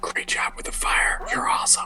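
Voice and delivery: hushed, soft, close-up whisper. Whispering in someone's ear about the fire, whispered. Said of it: "I'm just gonna whisper in your ear".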